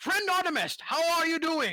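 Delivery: high-pitched yelling in a character voice. Greeting a fellow character on the dance floor: shouting in character. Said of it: "you shouting in my ear".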